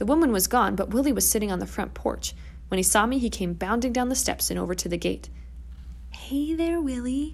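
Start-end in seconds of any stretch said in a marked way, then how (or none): 6.1-7.3 whisper, much higher, slower. Sneaking up to a gate with a friend, greeting a dog, whispering. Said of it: "I whispered".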